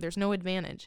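ordinary talk, nothing marked

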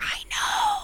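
high-pitched, soft, breathy whisper. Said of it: "He's like".

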